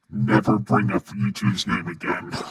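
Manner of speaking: low, demonic voice with voice-changer effect. Voicing an imagined warning in a comic bit; evil voice mod. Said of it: "That was the evil voice mod".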